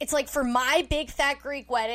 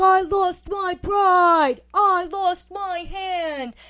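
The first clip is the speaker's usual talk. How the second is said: play-acted furious, very slow, drawn-out, raised voice; 6 semitones higher, 8 dB louder than usual. Retelling a movie scene to another speaker: imitating Nicolas Cage, furious. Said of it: "he's so mad".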